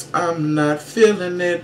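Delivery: high, put-on kitty-cat character voice. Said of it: "in my [name] Kitty Cat voice".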